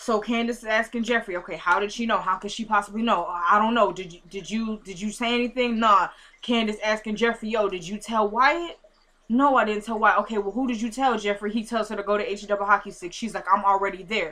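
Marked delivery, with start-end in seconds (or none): none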